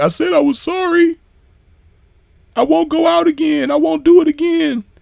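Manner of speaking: play-acted sweet, innocent, tearful pleading, very high. Retelling a recording of a woman apologizing: imitating a sweet, innocent crying apology. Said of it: "she crying and she sounding all like, you know, uh, sweet and innocent".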